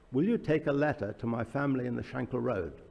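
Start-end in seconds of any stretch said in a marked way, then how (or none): none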